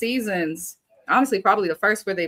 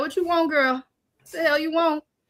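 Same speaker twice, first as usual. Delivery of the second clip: put-on grandma voice, higher; 9 semitones higher than usual. Imitating grandma greeting a visitor during her show: imitating grandma. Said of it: "She'll be like".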